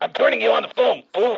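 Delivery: raspy, rough-edged, gruff delivery. Telling the other speaker to hold on: Mister T voice. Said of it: "Why does he sound like Mister T?".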